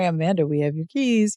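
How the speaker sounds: plain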